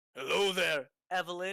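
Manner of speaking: woman's voice, very loud. A kenku greets Evelyn in her own voice, mimicking Evelyn's voice. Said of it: "in her voice".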